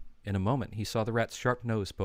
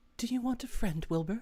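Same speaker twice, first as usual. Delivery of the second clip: very high, small, thin but pleasant voice; 14 semitones higher than usual. Narrating a voice from the darkness speaking to Wilbur, in a thin but pleasant voice. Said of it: "It sounded rather thin but pleasant".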